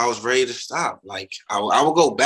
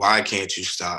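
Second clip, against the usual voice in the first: mock tearful crying voice, lower; 4 semitones lower than usual. Retelling a sister's crying question at the kitchen table: imitating a crying plea. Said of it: "my sister just crying and asking me".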